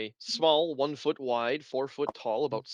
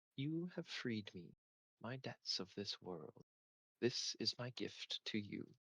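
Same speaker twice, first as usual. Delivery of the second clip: hushed, very soft, gentle voice; 3 semitones lower, 15 dB quieter than usual. Game master voicing the words a player hears on touching an item, soft gentle voice. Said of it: "spoken softly in a gentle voice".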